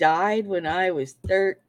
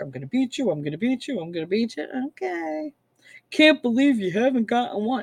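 mock boastful, fast, gloating, repeated jeering; 4 semitones higher than usual. Retelling how the husband boasted during a dice game: mock-boastful taunting. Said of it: "he's like all boasting".

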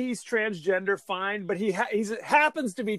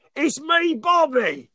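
put-on Cockney accent, higher and louder; 6 semitones higher, 5 dB louder than usual. Voicing the killer's message: crazy Michael Caine voice. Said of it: "a crazy Michael Caine voice".

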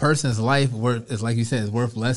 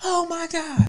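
voice jumps an octave higher, distressed. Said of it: "her voice goes into a higher octave immediately".

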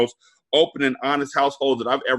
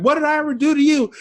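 mock, very high-pitched screaming yell; 4 dB louder than usual. Retelling screaming at him all the way home, re-enacting the scream. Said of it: "I'm screaming at him all the way home".

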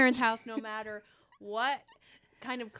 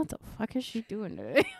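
put-on mumbling voice; 5 semitones lower than usual. Speaker pictures what Mike would mutter about her, imitating Mike mumbling. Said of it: "He'd be like mumbling like".

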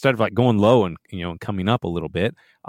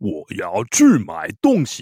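big exaggerated Chinese ad announcer voice. Demonstrating how chinese ads sound, in a big exaggerated announcer voice. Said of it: "like that big announcer's voice".

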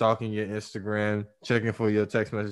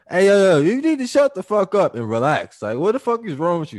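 very high-pitched, very loud, booming, swooping yell; 9 semitones higher, 9 dB louder than usual. Showing the wrong way to speak to her when she's wilding, yelling. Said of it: "Don't yell at her and tell her".

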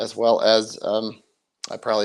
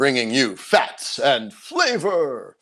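theatrical, swooping wrestling-ring announcer voice; 4 semitones higher than usual. Speaker who sounds bad from illness tries out a dramatic wrestling announcer voice. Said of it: "my very dramatic announcer's voice".

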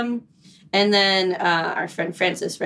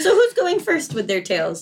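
breaking voice, cracking upward; 8 semitones higher than usual. Asking the group who goes first with their Pride tales, voice cracking. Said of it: "as my voice cracks".

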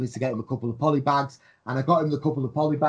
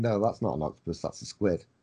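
very low, soft, strictly straight deadpan; 7 semitones lower, 6 dB quieter than usual. Retelling showing a build to Drew, in Drew's strictly straight voice. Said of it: "in that strictly straight voice that he does".

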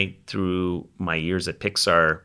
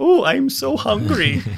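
very high-pitched cartoonish caterpillar voice; 4 dB louder than usual. Listing a voice actor's roles, quoting the caterpillar from Bug's Life in Heimlich voice. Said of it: "the caterpillar's like".

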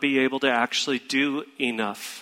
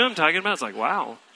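plain

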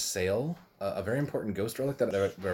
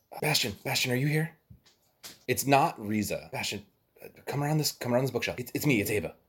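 hushed character whisper, higher-pitched; 2 semitones higher than usual. Game master voicing Ava, calling a player's character from behind a bookshelf, hushed whisper. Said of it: "you hear a very hushed whisper".

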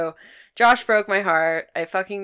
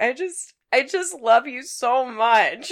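mock drunken sobbing, higher; 7 semitones higher than usual. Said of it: "drunk crying".

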